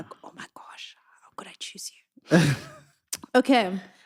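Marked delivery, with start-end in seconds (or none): 1.2-2.4 hushed whisper. Acting out an in-the-moment thought during a conversation, whispered. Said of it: "Why did you whisper that part?".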